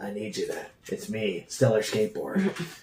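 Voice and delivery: very quiet, very slow, barely audible murmur. Introducing oneself as Stellar Skateboard in a Solid Snake voice. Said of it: "like a Solid Snake impression".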